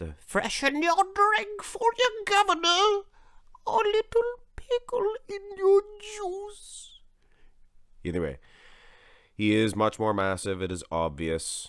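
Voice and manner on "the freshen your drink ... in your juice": very high, bad put-on English accent. Speaker voicing an imagined British hag, bad English accent. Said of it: "I apologize for that English accent".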